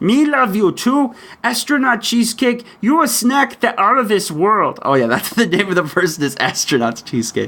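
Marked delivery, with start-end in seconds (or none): 0.0-4.8 put-on monster voice. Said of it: "Cookie Monster says".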